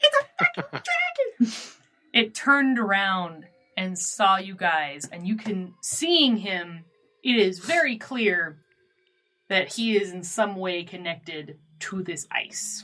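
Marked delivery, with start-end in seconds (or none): 0.0-1.5 tiny squeaky voice, much higher, faster. Narrating to the group, voicing the cry a jackrabbit hears, in a tiny squeaky voice. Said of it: "this tiny squeaky voice go".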